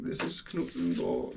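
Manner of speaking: half-whispered German accent. Reading out a place name from a zoo map: German accent. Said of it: "saying that with such a German accent".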